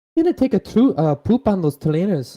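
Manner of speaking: imitated Welsh accent. Retelling what a man said, imitating a Welsh accent. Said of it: "how did the the accent go?".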